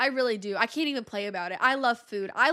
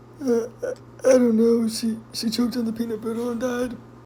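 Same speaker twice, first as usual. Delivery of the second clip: put-on elderly man voice; 5 dB louder than usual. The speaker performs an announced impression for listeners: old man impression. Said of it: "This is my impression of an old man".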